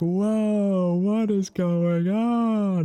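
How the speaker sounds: put-on very high, very slow, drawn-out panicked yell. Describing a man who films ordinary traffic on his dashcam, imitating a panicked scream. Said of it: "screams like he's about to get into a crash".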